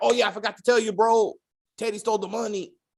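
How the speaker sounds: high put-on Latin accent. Recapping a show's plot, voicing a character's line in a Latin accent like Speedy Gonzalez. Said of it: "that was my best Latin accent".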